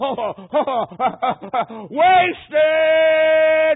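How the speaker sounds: very high, loud, piercing scream. Retelling a dying man crying out toward heaven: imitating a scream. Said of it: "he just screamed out".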